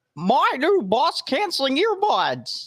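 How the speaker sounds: high squeaky voice with big pitch swoops. Reading the box aloud, taking turns with a partner: Mickey Mouse voice. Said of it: "I did more of a Mickey Mouse".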